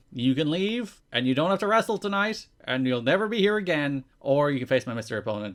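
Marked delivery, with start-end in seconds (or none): none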